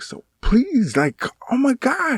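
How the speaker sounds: very high, drawn-out begging. Retelling pleading with wife: imitating own louder pleading. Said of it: "my voice was a little bit louder".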